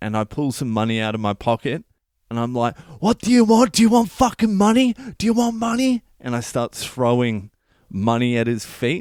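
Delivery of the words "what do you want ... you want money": very high, furious screaming, going off. Retelling throwing money at a man's feet, acting out screaming. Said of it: "Like I'm screaming".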